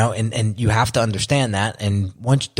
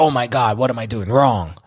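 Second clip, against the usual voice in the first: panicky, freaked-out delivery. Retelling worrying over quiet business months: imitating own freaked-out self. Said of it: "when I would get freaked out over quiet months".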